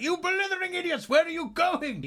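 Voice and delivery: shrill, very high, loud bellowing yell. Voicing a villain yelling at his minions as they flee: yelling at fleeing minions. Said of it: "yelling at his minions as they flee".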